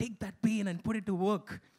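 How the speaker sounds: very aggressive, hard-driving motivational speaker voice. Recalling a motivational YouTube video, imitating the speaker's mock-aggressive motivational voice. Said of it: "in a very aggressive voice is just like".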